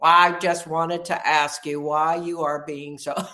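very loud, flat, toneless robot monotone. Recalling how her husband answered her: imitating a flat robot voice. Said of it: "answer me in the robot voice that had flat affect".

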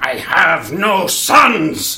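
dramatic scream, very slow, high-pitched and loud.

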